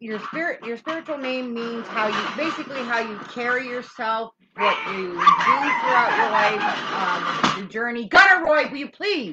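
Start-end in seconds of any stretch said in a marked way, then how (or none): 8.1-9.3 shouting, higher and louder. Interrupting an explanation to call out to a kid: yelling at a kid. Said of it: "I don't mean to yell at Gunner on here".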